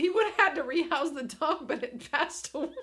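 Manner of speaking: words forced out while laughing. Speaker telling a story about a past dog, laughing while talking. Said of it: "I'm laughing while I'm saying it".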